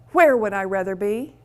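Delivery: ordinary delivery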